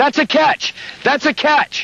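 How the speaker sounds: high-pitched, yelled call.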